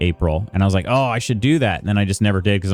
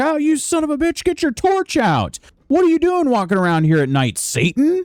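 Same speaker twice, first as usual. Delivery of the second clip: play-acted, very high, shrill, berating, angry shout. Retelling how game guards reacted to walking without a torch: imitating NPCs yelling. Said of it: "they're yelling at me like".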